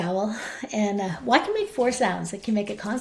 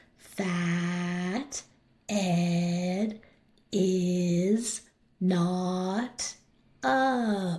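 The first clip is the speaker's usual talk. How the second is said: very slow, halting, every vowel held; 3 semitones lower, 3 dB quieter than usual. Showing how students should say a memorized sentence: stretched-out vowel sounds. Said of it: "by stretching out the vowel sounds so it'll sound like this".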